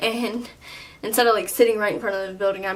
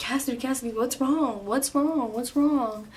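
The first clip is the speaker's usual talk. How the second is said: mock-alarmed, higher pitch and slower; 3 semitones higher, 3 dB quieter than usual. Recounting calling their mom in tears, the speaker imitates mom freaking out. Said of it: "she freaks out over every little thing".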